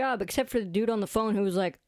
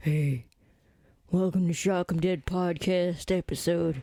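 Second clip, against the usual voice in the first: put-on big burly man voice, lower pitch; 4 semitones lower than usual. Imagining a big burly guy recast as the podcast host: big burly guy voice. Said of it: "this big burly guy".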